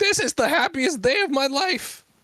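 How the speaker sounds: very high, weepy, tearful, overjoyed imp voice. Voicing an imp given a small trident: imp crying with happiness. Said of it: "It starts, like, crying".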